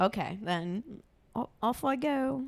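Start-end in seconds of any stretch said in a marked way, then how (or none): 1.3-2.4 high-pitched, bad fake Scottish accent. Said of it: "Is that how they speak?".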